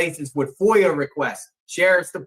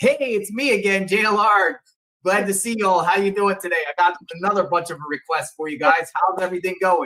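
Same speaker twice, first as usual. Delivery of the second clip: put-on easygoing, friendly, laid-back delivery; 2 semitones higher than usual. Retelling how they greet records staff: imitating own friendly manner. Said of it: "really cool about it".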